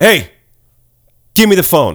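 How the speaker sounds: play-acted no-nonsense tone. Speaker retelling what he told a man: retelling a very stern demand. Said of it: "in a very stern voice".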